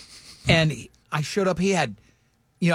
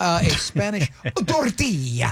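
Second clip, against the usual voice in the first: put-on news anchor voice with accent.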